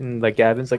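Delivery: ordinary talk, nothing marked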